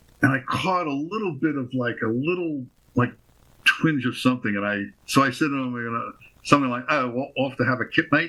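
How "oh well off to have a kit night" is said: bad, obviously fake put-on Australian accent. Retelling what the speaker said to him, in a terrible Australian accent. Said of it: "it's a terrible Australian accent".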